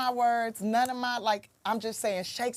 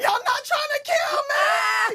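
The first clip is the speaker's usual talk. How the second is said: shrill, very high, loud shouted exclamation; 7 dB louder than usual. Retelling yelling out to a cheering school auditorium: retelling her own yell. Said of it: "I literally yelled that out".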